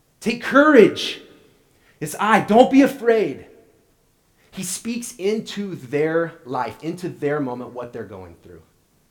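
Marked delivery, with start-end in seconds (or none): 0.2-3.4 very loud, high call carrying across distance. Acting out Jesus calling to the afraid disciples, acting out calling out. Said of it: "He calls out to the disciples".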